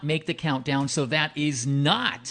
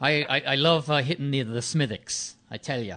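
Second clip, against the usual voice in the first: light, slow, put-on Irish brogue. Joking on air about who drinks more: put-on irish brogue. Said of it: "he's doing a little Irish, uh, brogue".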